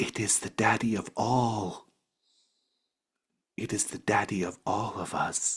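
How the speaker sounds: put-on whispered child's voice. Voicing a child who whispers in a character's ear: child whispering. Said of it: "The child whispers in your ear".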